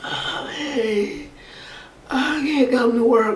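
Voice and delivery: weak, high, very drawn-out put-on sick voice. Showing the voice used on the phone to skip work, weak put-on sick voice. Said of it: "your extra super duper sick, ... that voice".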